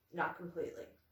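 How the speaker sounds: very serious, grave delivery. Retelling Picard's answer about getting his humanity back: imitating Picard's serious tone. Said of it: "in a very serious tone".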